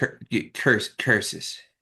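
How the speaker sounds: grumbled under the breath, in a put-on voice. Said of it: "And I mutter".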